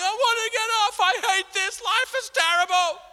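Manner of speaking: put-on, shrill, very high sobbing and screaming wail. Retelling a roller coaster ride with a woman, imitating someone screaming and crying. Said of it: "she's screaming, she's crying".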